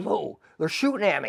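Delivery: mock startled, amazed, shocked high cry. Retelling a fellow soldier's shout after sniper fire: imitating someone yelling, amazed. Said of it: "and he yells".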